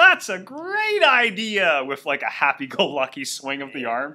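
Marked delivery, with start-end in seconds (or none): 0.0-1.8 shrill, high, swooping, slow, drawn-out belting. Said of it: "Demon Roger uncharacteristically says".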